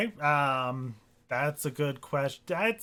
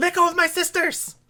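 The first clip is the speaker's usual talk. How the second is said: put-on tiny girl's very high, piping voice; 8 dB louder than usual. Playing a tiny girl whose sisters have been grabbed: little girl's voice. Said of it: "this little girl's voice go".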